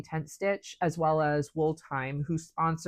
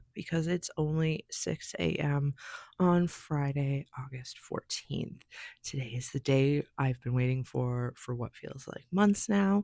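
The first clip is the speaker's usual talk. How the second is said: soft, hushed whisper; 2 semitones lower than usual. Speaking to viewers at six a.m. while her husband still sleeps, whispering. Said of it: "I'm whispering because my husband is actually still asleep".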